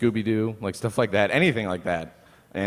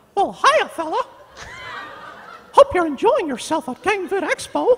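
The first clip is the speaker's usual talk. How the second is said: high, loud, bouncy squeaking voice; 6 dB louder than usual. Asked by another speaker to do the Mickey Mouse voice at Gamevid Expo: Mickey Mouse voice. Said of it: "now now do the Mickey Mouse voice".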